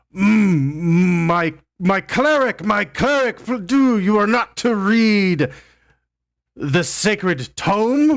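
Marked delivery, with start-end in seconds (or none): 1.3-8.2 haughty, incredulous, lofty voice, pitched up. As game master, the speaker voices Aletheus warning a cleric off the sacred tome: Aletheus's incredulous, high-and-mighty voice. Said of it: "incredulous, uh, high and mighty voice".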